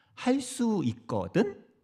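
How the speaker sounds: high, slow questioning rise on 할 수 있거든.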